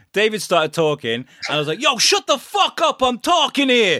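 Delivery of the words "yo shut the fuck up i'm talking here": very high, put-on tough-guy New York accent. Retelling a sketch playing a guy from new york: put-on new york tough guy. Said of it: "I was a guy from New York".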